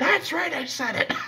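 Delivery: very high, nasal voice squeezed up through the nose. Mocking a radio host's line he just played: imitating Mark Levin's high-pitched nasal voice. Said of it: "I love his high-pitched nasally voice".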